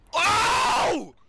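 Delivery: sudden yell, high and loud.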